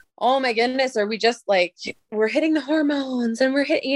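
dry, needling, sarcastic, sardonic tone. Recounting own reaction to a 12-year-old girl's emotions: retelling own sarcasm. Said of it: "and I'm being sarcastic about it".

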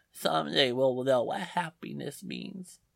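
put-on child whispering far from mic. Describing a kid on an album track, far from the microphone: distant whispering child. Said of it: "sounds like he's whispering".

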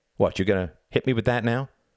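mocking, contemptuous, scornful sneering tone. Taunting the boy who has got up still holding a rock, sneering. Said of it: "sneered Reginald".

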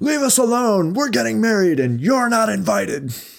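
shrill, high, furious, losing-it yell. Retelling how Desmond shouted at festival crowds: retelling a shout. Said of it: "and he shouts".

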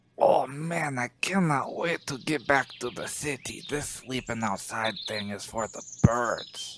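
very hushed, very quiet, leaning-in whisper. Leaning over in character to speak privately to Horbus: whispering in character. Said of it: "lean over and whisper to".

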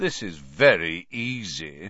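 low, lazy, easy drawl, stretched long. Reading the story aloud, Malfoy speaks while patting Buckbeak, in Malfoy's drawl. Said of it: "Malfoy drawled".

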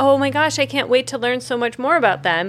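ordinary delivery

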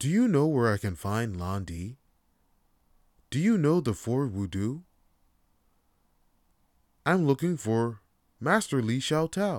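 stiff, stilted, clunky video game character reading. Imitating a game's quiet main character asking around: monotone Ryo impression. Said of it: "just monotone and shit".

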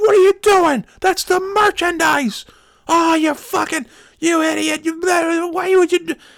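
put-on shrill, very high, furious screaming rant. Retelling a coworker's rant over a dropped coupon card: imitating someone screaming. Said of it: "so he's screaming at me".

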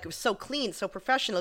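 ordinary talk

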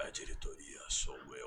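hushed, breathy, whispered stage delivery. Retelling his reply to a woman who blamed the board, in Batman voice. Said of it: "eu fiz a voz do Batman e falei assim".

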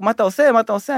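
loud shout. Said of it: "כולם מתחילים לצעוק".

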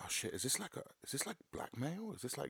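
hushed, high, panicked, freaking-out worry.

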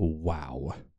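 snide, rude "wow" stretched out long. Retelling how a passing woman reacted: imitating a rude "wow". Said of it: "Like, in a rude way".

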